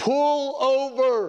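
acted, high-pitched, barked shout, drawn out too long. Telling a joke, the speaker voices a cop beside a knitting granny: retelling a shout. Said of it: "he shouts".

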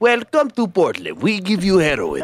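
put-on Russian accent. Joking about drug dealers in portland, speaking in a mock russian accent. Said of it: "You're so Russian".

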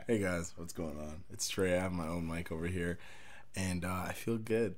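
soft, sexy, seductive voice. Greeting a show's audience on his own mic, putting on a sexy voice. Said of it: "Why are you putting on a sexy voice?".

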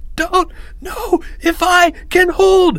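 very high, slow, drawn-out gasping breathless stammer. A narrator reads Timmy, propped up by Leo in a pushing crowd, stammering, struggling to breathe. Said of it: "Stammered Timmy, trying to breathe".

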